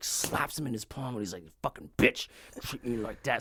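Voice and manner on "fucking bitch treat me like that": play-acted furious, pissed-off angry cursing. Retelling a scene where a man slaps his palm: imitating a pissed-off man. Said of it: "So he's all fucking pissed off".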